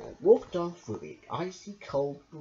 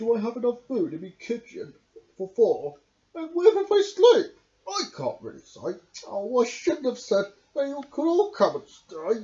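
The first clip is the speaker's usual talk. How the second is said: put-on high children's-storybook badger character voice; 6 semitones higher, 4 dB louder than usual. Reading a story aloud, voicing the badger's lines in a badger voice. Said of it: "being Read by Me by only using the Badger's Voices".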